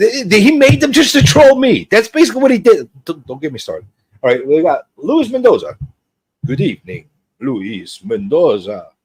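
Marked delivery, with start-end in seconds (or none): 6.5-8.8 slow, vaguely Italian put-on accent. Greeting the next person on the list, in a weird put-on accent. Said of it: "See, I did an accent".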